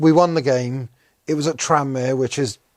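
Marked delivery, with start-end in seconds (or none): none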